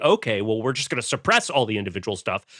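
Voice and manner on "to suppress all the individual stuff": ordinary talk, nothing marked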